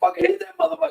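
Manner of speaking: put-on, shrill, very high hollering yell. Retelling urging a fighter to hit someone: imitating yelling. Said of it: "we're yelling".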